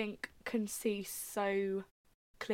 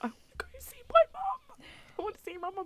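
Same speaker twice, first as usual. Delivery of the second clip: high-pitched sobbing through tears; 13 semitones higher than usual. Retelling bursting out crying in the middle of Waterloo: imitating own past crying. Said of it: "burst out crying in the middle of Waterloo".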